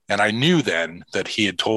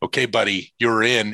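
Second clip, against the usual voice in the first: ordinary delivery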